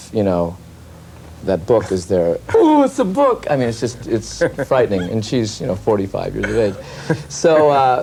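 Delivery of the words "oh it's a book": very high, eager, gushing delight, acted out. Describing sister's enthusiasm for life, acting her seeing a book: Nora, mock-excited. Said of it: "My sister Nora will get excited".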